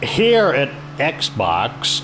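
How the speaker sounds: slow, mechanical corporate drawl.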